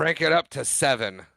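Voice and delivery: ordinary talk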